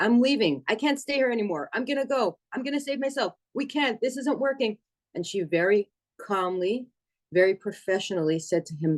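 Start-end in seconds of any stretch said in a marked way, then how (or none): 0.0-4.8 high-pitched shouting. Retelling a phone call where a patient shouted behind the caller: retelling a patient's shout. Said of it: "one of the patients shouting".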